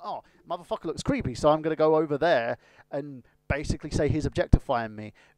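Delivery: ordinary delivery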